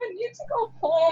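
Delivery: mock desolate sad voice. Retelling what the other speaker said to Sloan, imitating a sad voice. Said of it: "the saddest voice I've ever heard though".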